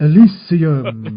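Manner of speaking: very loud, sweeping, grand delivery. Speaker shows how they always say the film title: grand voice on 'Elysium'. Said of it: "I always say Elysium in a very grand voice".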